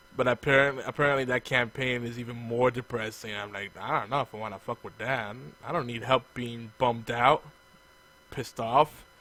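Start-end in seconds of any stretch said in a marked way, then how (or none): none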